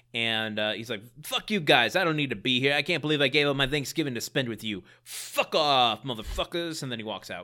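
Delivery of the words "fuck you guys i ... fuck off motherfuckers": play-acted, angry, pissed-off cursing tirade. Retelling what an angry man said as he walked out, imitating an angry outburst. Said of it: "he gets angry".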